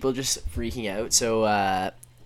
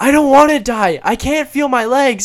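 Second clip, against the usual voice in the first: very high, shrill, full-volume yelling scream; 11 dB louder than usual. Speaker retells a woman at 3 a.m. screaming at people, imitating a woman yelling. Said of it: "And she just starts yelling. She's like".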